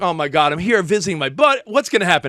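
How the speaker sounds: mock panicked heavy breathing, panting. Retelling his panic on meeting a woman: imitating heavy breathing. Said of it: "breathing heavy".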